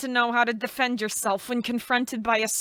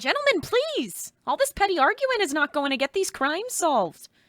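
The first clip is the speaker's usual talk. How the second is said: put-on sudden pitched-up Minnesotan accent; 5 semitones higher than usual. Breaking up two detectives arguing in a scene, in a Minnesotan accent. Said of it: "Why did I just say that in a Minnesotan accent?".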